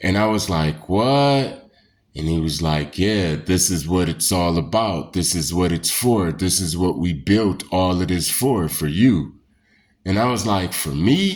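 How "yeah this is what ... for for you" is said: mimicked deeper, low voice. Retelling what a voice behind him said to him, imitating a deeper voice. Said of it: "his voice changed into like a deeper type of voice".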